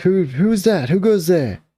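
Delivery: very high-pitched, rising yell. Narrating a tabletop game scene, voicing a man coming over, yelling. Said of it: "he's yelling".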